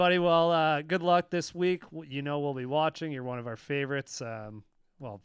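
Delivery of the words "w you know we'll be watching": ordinary delivery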